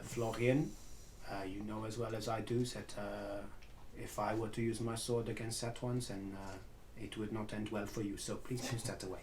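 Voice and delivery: muttering under breath. Warning a companion up close to put his sword away: quietly under his breath. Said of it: "quietly, under my breath".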